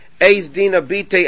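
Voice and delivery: ordinary talk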